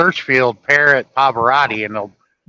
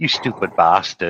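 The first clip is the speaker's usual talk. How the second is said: put-on deep-voiced British accent; 6 semitones lower, 3 dB quieter than usual. Retelling what a friend's parrot always used to say: British accent. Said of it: "just like a British person would".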